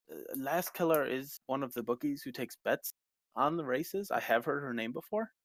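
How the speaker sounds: normal talking voice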